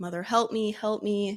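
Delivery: plain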